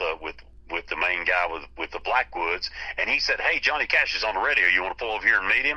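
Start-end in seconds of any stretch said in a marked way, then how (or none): none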